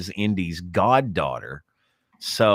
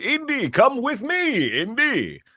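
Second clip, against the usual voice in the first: very high, very slow, drawn-out calling character voice. Imitating how the actor talks when greeting Indy: John Rhys Davies impression. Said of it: "He talk like this".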